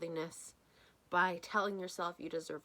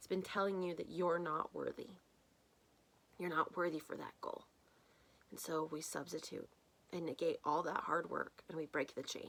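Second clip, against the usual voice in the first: soft, tearful voice tearing up, near crying; 2 semitones lower, 5 dB quieter than usual. A speaker addressing an audio audience, tearing up. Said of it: "Apologies for tearing up a little bit there".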